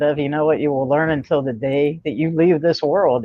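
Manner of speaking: ordinary delivery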